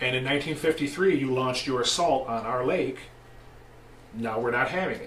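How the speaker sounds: ordinary delivery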